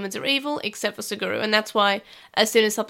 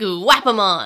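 loud, belted-out, distinct creature voice; 2 semitones lower, 6 dB louder than usual. Describing a character's different voice: imitating Guapamon's voice. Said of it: "Guapamon has a different voice".

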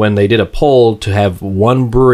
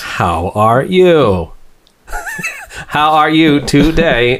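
high-pitched put-on voice with swooping pitch; 6 semitones higher than usual. A co-host greets his partner at the show's opening in his Stephen Hawking voice. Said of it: "Is that your Stephen Hawking voice?".

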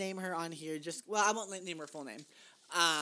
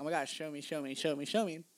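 ordinary talk, nothing marked

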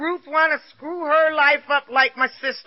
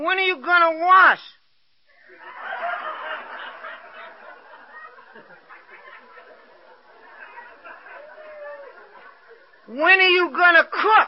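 mild half-yell, acted out; 4 semitones higher than usual. Retelling what a husband started screaming about: imitating a husband screaming. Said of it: "this man started screaming".

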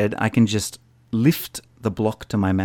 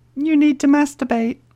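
little lady's voice, much higher; 4 dB louder than usual. Voicing what it tells you, in a little lady's voice. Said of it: "It's like a little lady's voice".

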